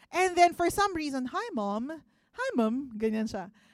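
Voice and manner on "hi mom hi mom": put-on British accent, stretched very slow. Retelling how a son greeted his mother: imitating a son's British accent. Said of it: "speaking like a British, ano, national".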